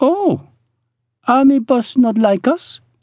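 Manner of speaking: astonished, amazed exclamation, voice very high. Told the boss is an army colonel, she answers: amazed. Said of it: "She sounded amazed".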